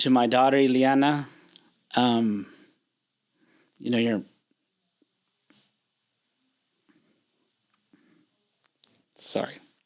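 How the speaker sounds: voice catching, choked-up, halting. Speaker turns to a message for their daughter, choking up. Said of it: "Sorry, I get a little emotional".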